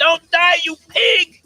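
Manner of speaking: very high, very loud shrill screaming. Speaker imitating racetrack gamblers cursing a horse mid-race, imitating someone screaming.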